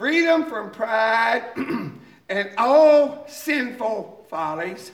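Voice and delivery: slow, drawn-out reading, each word given weight. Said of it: "I'm just gonna read them slowly".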